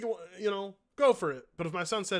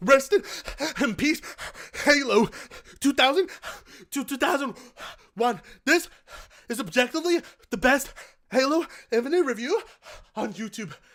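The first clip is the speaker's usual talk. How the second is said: mock gasping speech, higher and louder; 7 semitones higher, 6 dB louder than usual. Reading a comment aloud in imitation of its writer: imitating him, gasping for air. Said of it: "let me read it like him".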